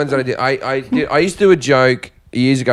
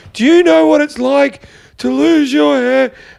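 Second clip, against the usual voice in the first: put-on very high, ragged, rough shriek; 13 semitones higher than usual. Retelling what an upset audience member did after a joke: imitating a scream. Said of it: "she just screamed".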